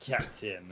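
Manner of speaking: hushed, breathy, maximum sarcasm on the word Captain. Retelling a scene's line 'As ye say, Captain': mock-sarcastic 'Captain'. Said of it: "he drops the last captain with uh, just about as much frickin' sarcasm as he humanly can".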